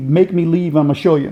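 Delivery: ordinary delivery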